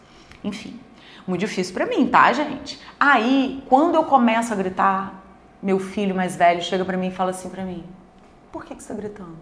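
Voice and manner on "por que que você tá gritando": very quiet, soft-spoken, gentle voice. The speaker retells the eldest son's question about the shouting, imitating a soft-spoken question. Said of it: "Ele fala baixo".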